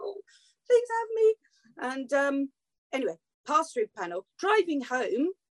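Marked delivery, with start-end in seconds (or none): 0.0-1.4 very high, tiny, small pleading voice. Retelling sitting nervously before the panel: imitating a small pleading person. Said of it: "reduced to this, like, little person going".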